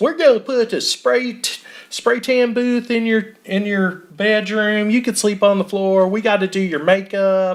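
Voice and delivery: exaggerated put-on Texas accent. Recounting a stepmom acting as Bella's pageant sponsor, in exaggerated Texas accent. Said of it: "horrible Texas accents that I don't think are real".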